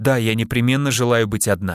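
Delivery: plain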